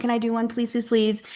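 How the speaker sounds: pleading, begging tone. Retelling a wife begging her husband for a palm reading: imitating a pleading wife. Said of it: "really, really wanted to do one".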